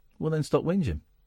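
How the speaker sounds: plain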